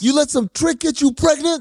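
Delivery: very high, furious, ranting tirade. Quoting a movie pimp yelling at a pregnant woman: imitating a furious pimp. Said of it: "pimp is furious".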